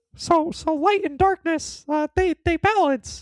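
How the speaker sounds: very high, loud, squeaky voice. Trying a Mickey voice after being asked, quoting a speech: Mickey Mouse voice. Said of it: "Please try".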